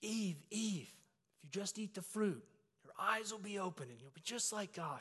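loud stage whisper, loud enough to carry. Playing Satan to his wife's Eve before a thousand people: retelling a loud stage whisper. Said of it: "I'm whispering in her ear loud enough".

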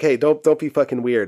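ordinary talk, nothing marked

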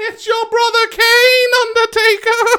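very high, loud, shrill wrestling-manager voice, belted out. Imitating the Undertaker's former manager addressing the Undertaker, Paul Bearer voice. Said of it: "Did he really talk like that?".

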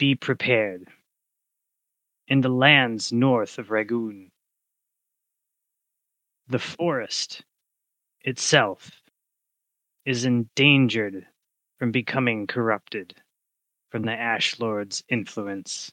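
rolling, raspy forest-spirit voice like rustling leaves. The storyteller voices a deer whose voice comes from every tree, rolling, raspy forest voice. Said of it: "A rolling, raspy voice of dry leaves and tree branches in the wind. / a voice emanates from every tree and leaf and twig in the forest".

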